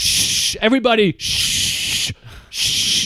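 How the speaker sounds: sarcastic, very slow, drawn-out fake shush. Retelling how a heckler shushed everyone as the speaker closed: imitating a sarcastic shush. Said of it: "a sarcastic shush".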